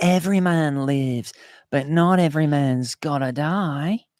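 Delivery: put-on high-pitched Scottish movie-hero accent. Asked by another speaker to quote a movie line, Braveheart accent. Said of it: "do a Braveheart one".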